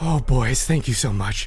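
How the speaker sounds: relieved delivery let out on a sigh. Game master voicing Flinge as he thanks the boys: sigh of relief. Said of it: "he breathes a sigh of relief".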